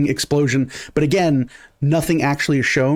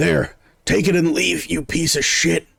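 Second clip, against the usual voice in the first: rough, creaky, groaning man's voice; 3 semitones higher than usual. Voicing a Kenku who throws a shiny thing to the ground: groaning man's voice. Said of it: "you hear this groaning sound, this, this man's voice again go".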